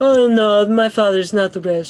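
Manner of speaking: affected high-society voice. Doing an impression for friends who asked for one: Ivanka impression. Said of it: "that's definitely Ivanka".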